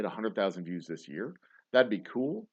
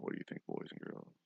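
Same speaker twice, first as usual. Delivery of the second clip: seductive, sexy late-night tone. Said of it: "This is my sexy midnight voice".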